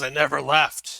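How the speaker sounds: loud, grumbling voice sounding from down below. A voice calls up from down the circular staircase, grumbly voice. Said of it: "The grumbling voice says".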